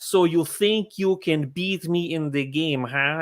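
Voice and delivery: put-on slow, unhurried Russian accent. Retelling a film set story, imitating an actor's accent: imitating Malkovich's Russian accent. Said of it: "he did that accent".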